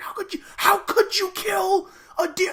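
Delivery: put-on upset scream, squealed out very high. Retelling a woman in a bar screaming at a hunter: imitating a woman screaming. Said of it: "starts screaming at her, like, screaming".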